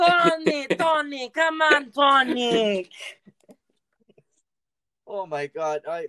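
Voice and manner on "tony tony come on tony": very high, very slow, loud put-on Italian accent. Calling out the name tony, joking about italian names: put-on italian accent. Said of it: "I think I finally became Italian".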